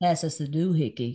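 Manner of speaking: put-on Southern American accent. Taking a turn in an accent game, saying the phrase in a Southern American accent. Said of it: "Say it in your best Southern American accent".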